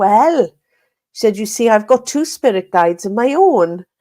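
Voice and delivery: loud put-on Welsh accent. Retelling an aunt talking about spirit guides: imitating aunt's loud welsh accent. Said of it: "she's got a really Welsh accent".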